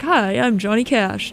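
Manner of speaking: slow, easy, laid-back delivery. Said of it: "in the [name] voice".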